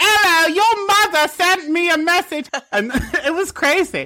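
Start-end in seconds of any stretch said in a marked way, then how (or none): 0.0-2.5 fake British accent, high and slow. Retelling birthday-card calls to strangers, fake British accent. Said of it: "I pretended to be British".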